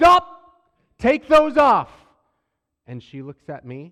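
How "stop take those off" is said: raised voice, very loud and very high. Speaker recounts ordering a girl to stop and take off her Crocs; retelling a raised voice. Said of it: "I raised my voice again".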